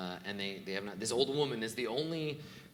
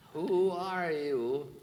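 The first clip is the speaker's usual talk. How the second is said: put-on old woman character voice, higher and louder; 7 semitones higher, 6 dB louder than usual. Voicing an old woman who halts an approaching player: voicing an old woman. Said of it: "the old woman stops and".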